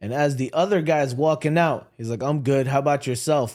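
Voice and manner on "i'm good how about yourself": put-on uncaring, indifferent, dismissive tone. Retelling a man's reply while walking out a restaurant door: imitating someone who doesn't care. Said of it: "like, he does not care".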